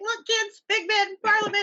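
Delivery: mock very high voice, laughing through tears. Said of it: "he's laughing and crying at the same time".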